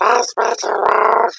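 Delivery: very high, rasping, creaky insect voice. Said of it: "that insect voice".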